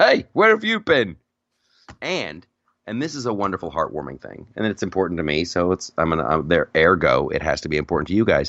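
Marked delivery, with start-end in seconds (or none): 0.0-1.2 put-on high-pitched English accent. Recalling something outrageously funny, speaker voices Chewbacca talking with an English accent. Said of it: "talking with this English accent".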